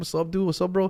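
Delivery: put-on speaking with an El Paso accent. Showing how people in El Paso talk: imitating an El Paso accent. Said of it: "El Paso, mostly people talk like this all the time".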